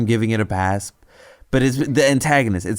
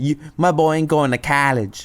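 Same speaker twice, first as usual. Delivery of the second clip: put-on drawling voice, much higher pitch; 5 semitones higher than usual. Describing an interesting accent, the speaker imitates it: a drawling accent with rolled R's. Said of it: "their accents ... the R's would roll".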